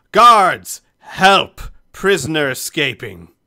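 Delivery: icy, very loud, slow, drawn-out call. Voicing a character who grabs a prisoner by the throat: cold call for guards. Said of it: "she looks at you coldly as she says that".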